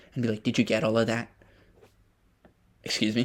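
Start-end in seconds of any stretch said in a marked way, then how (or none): 0.4-1.2 mock-sassy assistant voice, faster. Describing how the assistant talks back, the speaker mimics it: sassy Alexa impression. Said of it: "this Alexa here is a bit sassy".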